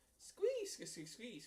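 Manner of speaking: very high, squeaky little rat voice. In a group role-play after the Tin Man's lines, squeaky voice. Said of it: "he just prefers to squeak".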